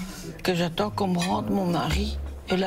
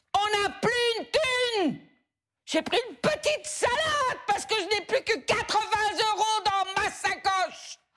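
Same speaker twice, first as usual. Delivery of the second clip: shrill, very high, angry yelling; 14 semitones higher than usual. Arguing with the other person, shouting angrily. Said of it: "Je vois pas pourquoi tu cries".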